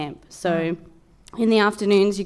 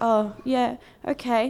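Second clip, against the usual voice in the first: hesitant, shy, slightly nervous, timid voice; 4 semitones higher than usual. Retelling a timid camper's reply at bingo night, imitating a nervous camper. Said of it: "Like a bit nervous".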